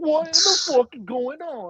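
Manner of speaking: put-on blurted quickly and high in a British accent. Retelling William Regal's reaction in his office: imitating William Regal's British voice. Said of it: "it was in his British voice".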